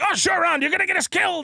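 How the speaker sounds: very high, cranky, fed-up scolding yell. Retelling a movie scene, imitating Indiana Jones yelling. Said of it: "he's always yelling at Short Round".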